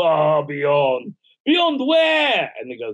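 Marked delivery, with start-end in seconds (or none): 0.0-1.1 eerie, spooky, creepy put-on voice. Retelling a man's reply in a story, done in a creepy voice. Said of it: "the creepy voice".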